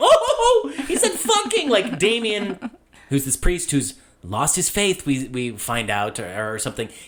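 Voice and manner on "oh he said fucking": put-on very high, slow, drawn-out little-girl voice. Retelling a priest's reaction to a swear word, imitating a little girl. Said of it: "reacts to this like a little girl".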